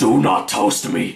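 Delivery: talking toaster character voice. Answering someone surprised that the toaster talks, in a talking toaster voice. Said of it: "I was doing that toaster voice".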